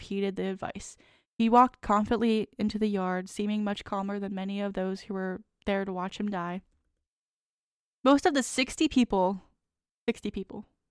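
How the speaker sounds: plain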